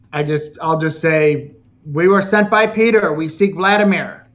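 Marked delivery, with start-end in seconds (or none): 1.8-4.0 high-pitched, shouted, yelled-out voice. Yelling at attackers as they charge: yelling. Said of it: "can I just yell something".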